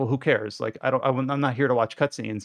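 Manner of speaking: usual speaking voice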